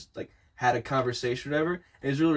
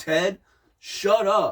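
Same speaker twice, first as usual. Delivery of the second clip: mock pleasant, polite, nice friendly tone; 5 semitones higher, 3 dB louder than usual. Complaining that he told Ted to shut up, imitating him in a mock-nice tone. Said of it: "like in like a nice".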